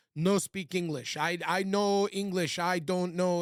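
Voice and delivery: slow, put-on Turkish accent. Retelling a phone call with a man ignoring the speaker's messages: imitating a turkish accent. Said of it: "in his Turkish accent".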